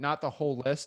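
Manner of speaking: usual speaking voice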